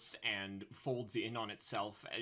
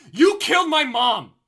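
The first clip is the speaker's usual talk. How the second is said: very high, very loud, shrill, top-of-the-lungs scream; 22 dB louder than usual. Amid the chaos, [name] pulls away and yells: [name] yelling at top of lungs. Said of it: "yells at the top of his lungs".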